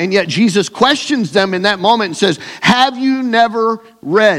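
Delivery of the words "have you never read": high, slow sarcastic tone. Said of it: "notice the sarcasm in Jesus' voice".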